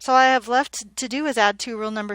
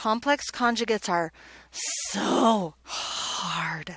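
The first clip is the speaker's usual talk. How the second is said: heavy, dripping sarcasm, drawn out very slowly; 4 dB quieter than usual. Starting a new topic with students, in a sarcastic tone. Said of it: "Can you hear my sarcasm?".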